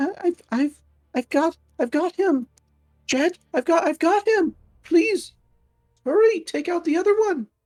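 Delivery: timid little voice. A character calls to an ally during a fight: timid little voice. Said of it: "a timid little voice just going".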